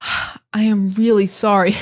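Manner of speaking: big, weighty, serious tone. Showing the kind of apology people don't give: big serious apology. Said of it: "It's not like a big apology".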